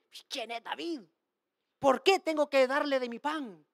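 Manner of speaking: full of horrible disdain, scornful and contemptuous. Retelling a foolish man's reply to david's request: retelling a scornful line. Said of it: "él lo dice con un desprecio horrible".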